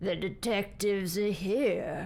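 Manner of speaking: husky-voiced speech. In a detective roleplay, a voice at the opening door announces: husky voice. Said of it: "you hear a husky voice say".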